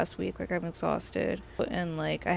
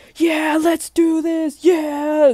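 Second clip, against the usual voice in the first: mock pumped-up cheer, very high and very loud; 10 semitones higher, 12 dB louder than usual. Speaker retells a Lyft ride, quoting the driver: retelling a hyped driver. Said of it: "like all hyped".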